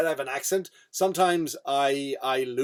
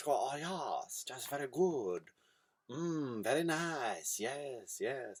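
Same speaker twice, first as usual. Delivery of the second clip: very slow, soft, put-on broken Chinese accent; 2 semitones lower, 12 dB quieter than usual. Telling a story, acting out speech in a broken chinese accent. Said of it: "I'm going to speak in a in a in a broken Chinese accent".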